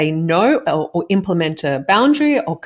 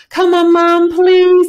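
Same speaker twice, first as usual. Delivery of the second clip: put-on nagging, pleading tone, higher and louder; 12 semitones higher, 7 dB louder than usual. Retelling how children beg a parent for ice cream: imitating kids pleading incessantly. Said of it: "they're incessant".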